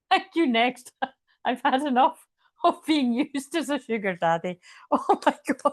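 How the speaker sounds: speaking through laughter. Losing it after repeating a line, laughing while talking. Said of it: "I'm going to pee myself".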